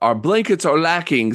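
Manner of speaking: usual speaking voice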